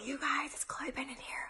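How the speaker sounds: soft, hushed whisper. Greeting viewers before an announcement, whispering. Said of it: "I don't know why I'm whispering".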